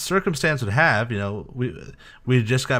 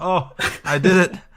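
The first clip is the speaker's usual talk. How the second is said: mock blissful relieved release, higher and louder; 7 semitones higher, 4 dB louder than usual. Imitating the other speaker finishing their final character: imitating sweet relieved release. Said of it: "this kinda sweet, orgasmic release".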